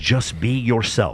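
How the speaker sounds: put-on Welsh accent. Speaker quotes a clip of Chris Williamson, in Chris Williamson's Welsh accent. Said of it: "He says it with his Welsh accent".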